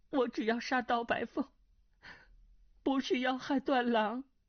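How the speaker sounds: shaky, trembling, quavering delivery. A woman, ordered to hand over the antidote, answers; trembling voice. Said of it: "穆婉清颤声道".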